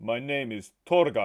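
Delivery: put-on Russian-accented voice. Giving his name again after being asked to repeat, in a russian accent. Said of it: "you're Russian".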